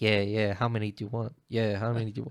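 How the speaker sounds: quick under-breath muttering. Telling a story about an actor watching a film, imitating Tom Hardy muttering under breath. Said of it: "Under his breath he starts going".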